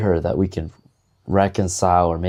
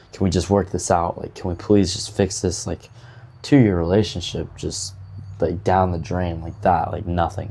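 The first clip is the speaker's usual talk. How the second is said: normal talking voice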